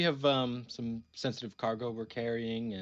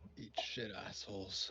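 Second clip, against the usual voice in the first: very hushed, quiet mutter under the breath; 2 semitones lower, 14 dB quieter than usual. Insulting the departing guards in character: muttered under the breath. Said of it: "very, very under my breath".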